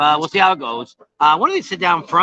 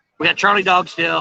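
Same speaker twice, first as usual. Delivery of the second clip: plain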